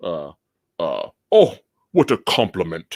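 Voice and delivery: bad, lazy fake British accent with a lisp. Showing how he spoke with something in his mouth, do a bad bootleg British accent as Kiefer Sutherland. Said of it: "super bootleg phoned in British".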